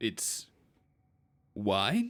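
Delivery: bewildered, baffled voice dropped very low. Acting out an imagined arena scene, speaking as Kratos: Kratos voice. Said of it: "and he says".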